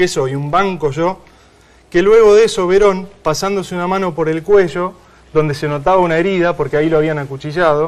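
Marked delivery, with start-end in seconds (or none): none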